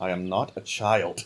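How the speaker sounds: muttered aside, half under breath, low and slow. Voicing a character who objects to being called a child: muttering. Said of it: "you hear Solana mutter".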